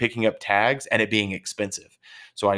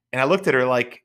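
ordinary talk

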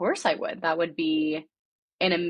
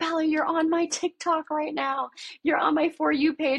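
high, excited mock screaming; 11 semitones higher than usual. Retelling a roommate shouting from downstairs: imitating roommate screaming. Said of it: "downstairs screaming".

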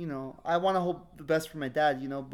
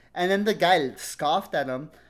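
ordinary talk

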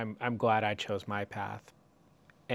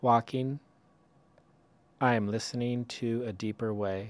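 slow, unhurried reading, each line landing. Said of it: "I'll read it slowly".

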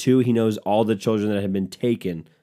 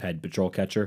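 usual speaking voice

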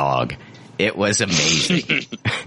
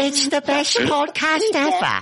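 put-on British accent, higher. Reading a listener review aloud in an Oliver Twist voice. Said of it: "turn into Oliver Twist when you do".

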